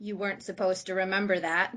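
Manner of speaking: put-on, utterly unruffled, very calm delivery. Retelling the reply to a nightmare: imitating a very calm reply. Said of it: "he looked at me very calmly and said".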